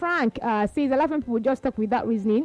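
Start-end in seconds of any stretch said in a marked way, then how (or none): none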